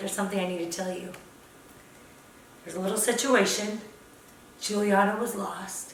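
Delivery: low, soft voice.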